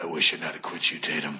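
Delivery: fake seductive voice. Closing a joking scene with a final line: put-on sex voice. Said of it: "I have to close out it with this line".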